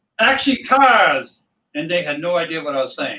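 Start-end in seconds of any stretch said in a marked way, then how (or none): 0.2-1.4 loud yelled call carrying across a space. Retelling a call to a film crew: retelling a yell. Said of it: "and I yell".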